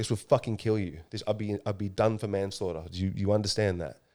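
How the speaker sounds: acted almost crying. Recounting what was said to a father after showing him heroin, retelling near tears. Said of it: "I was almost crying".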